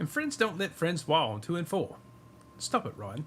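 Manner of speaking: deliberately horrible put-on voice, high and swooping. Joking with the others, then naming it: horrible Steve impression. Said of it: "That's my horrible Steve impression".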